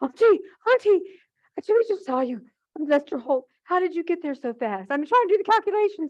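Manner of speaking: breathless, out-of-breath, very high chatter. Retelling a woman's phone call to auntie, imitating breathless phone talk. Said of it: "so she's breathless on the phone".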